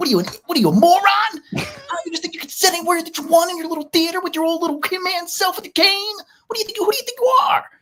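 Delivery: mock very high-pitched, unhinged angry rant. Retelling a scene where Ben Stiller rips up a ticket, imitating him ranting like a psycho. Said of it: "he turns into this psycho".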